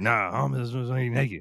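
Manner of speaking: put-on heavy Louisiana accent. Retelling a scene from Joe Dirt set in Louisiana: imitating Joe Dirt Louisiana character. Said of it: "like, Joe Dirt when he goes to Louisiana".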